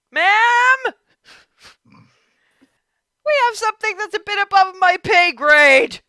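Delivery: very loud, shrill, high yell with "ma'am" stretched. A narrator voices a little halfling man opening a door and calling out: yelling. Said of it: "and yells".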